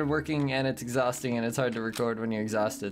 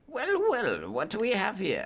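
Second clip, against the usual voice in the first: put-on cat voice, much higher, slower; 8 semitones higher than usual. Voicing the watchdog cat at the tunnel in a game, talking cat voice. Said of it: "He's a good watchdog. Cat".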